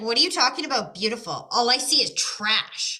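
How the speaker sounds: play-acted cranky kid's grumpy, grouchy, put-upon tone. A parent retells their son's reply across a restaurant table, imitating grumpy son. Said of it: "my grumpy son's sitting right here".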